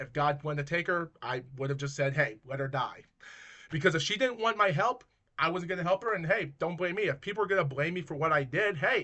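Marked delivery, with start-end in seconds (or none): none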